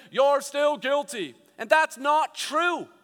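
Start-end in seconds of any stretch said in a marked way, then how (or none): 0.1-1.3 lofty, heavenly judge-like pronouncing voice. Speaker acting out a figure with a gavel pretending to speak for God: pretend voice of God. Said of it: "pretending to be the voice of God saying".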